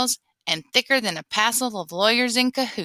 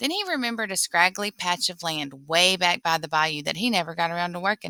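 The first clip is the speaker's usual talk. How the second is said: usual speaking voice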